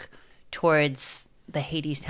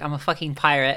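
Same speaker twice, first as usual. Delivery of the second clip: ordinary talk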